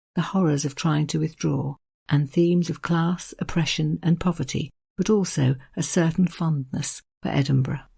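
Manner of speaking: ordinary talk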